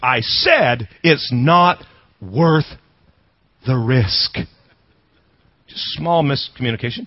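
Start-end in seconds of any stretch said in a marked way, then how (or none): 0.0-4.3 mock seething, fuming, very slowly spoken. Retelling the man answering the father: imitating a fuming man. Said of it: "he's fuming".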